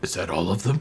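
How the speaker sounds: strange, low, soft gurgling voice. The narrator voices an unseen speaker the players hear, in a strange gurgled voice. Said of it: "a strange gurgled voice say".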